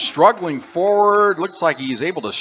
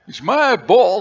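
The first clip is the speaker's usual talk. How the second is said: put-on Texas accent, pitched higher; 7 semitones higher, 4 dB louder than usual. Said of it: "like a Walter Brennan".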